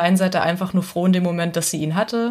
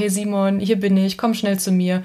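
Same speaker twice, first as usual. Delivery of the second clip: ordinary delivery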